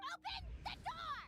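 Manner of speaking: very high, shrill, piercing shout. Character at a closed door, questioning the person inside, yelling. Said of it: "Stop yelling".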